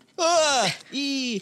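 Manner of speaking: high, disgusted squealing.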